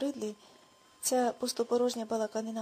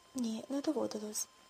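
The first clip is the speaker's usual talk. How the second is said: plain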